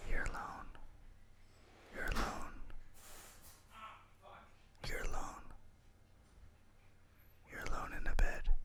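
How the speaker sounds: very quiet, breathy fake ASMR whisper. Doing a joke ASMR bit for the microphone: mock ASMR whisper. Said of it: "A S M R".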